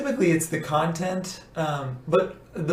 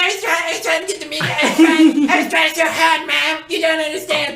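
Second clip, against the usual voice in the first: very high, very loud little cartoon-kid voice; 11 semitones higher, 8 dB louder than usual. Retelling what he says to his mom while they argue; South Park character voice. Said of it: "he just sounds like a little South Park character".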